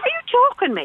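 high, outraged, disbelieving tone.

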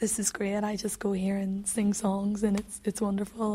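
ordinary talk

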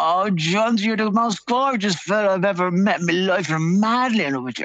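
high put-on voice, as close to a woman's as possible. Telling a story, the speaker addresses John: imitating Terry Healy's woman's voice. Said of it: "as close to a woman's voice as I can get".

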